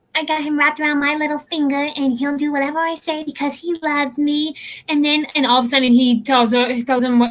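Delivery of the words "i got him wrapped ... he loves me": put-on sexy, sultry woman's voice. Retelling how a woman talks about her husband; put-on sexy woman's voice. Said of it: "sexist voice, right? Sexy".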